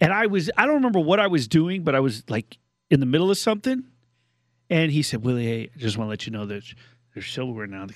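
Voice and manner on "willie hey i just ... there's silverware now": quieter, lower, hushed murmur under the breath. Speaker quoting a man who came over mid-task, retelling an under-breath remark. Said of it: "he came over like under his breath".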